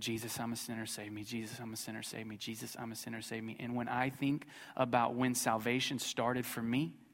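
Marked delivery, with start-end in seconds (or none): 0.0-3.5 muttering under his breath, lower and quieter. Retelling praying on the back row during a sermon: mumbling under his breath. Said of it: "mumbling under my breath".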